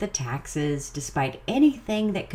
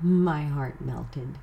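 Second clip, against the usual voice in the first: normal talking voice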